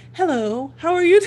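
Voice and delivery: put-on polite phone voice. Retelling a partner's remark about own phone greeting: imitating own phone voice. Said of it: "as soon as you get on the phone".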